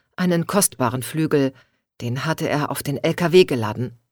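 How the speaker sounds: ordinary delivery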